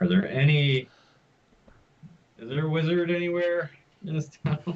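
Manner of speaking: loud, high-pitched, carrying calling-out voice. Playing a character asking a congregation about a wizard: asking loudly. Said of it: "just ask kinda loudly".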